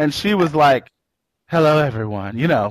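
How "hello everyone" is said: put-on breathy voice. Retelling a character marching into a room: imitating a breathy voice. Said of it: "that breathy voice she had".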